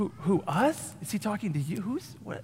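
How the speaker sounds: bewildered, caught-off-guard voices. Picturing the disciples answering Jesus's words: imitating the disciples. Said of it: "I just picture the disciples going".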